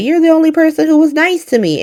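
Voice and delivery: high, genuinely shocked, stunned, wounded tone. Retelling a character's reply after being torn into: imitating someone shocked. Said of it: "Willow is genuinely shocked".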